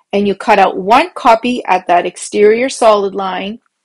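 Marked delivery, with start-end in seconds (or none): none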